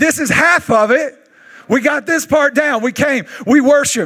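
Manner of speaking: high, fired-up, all-out scream like a lunatic. Speaking to the church gathering to inspire them, screaming. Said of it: "Now I'm screaming like a lunatic".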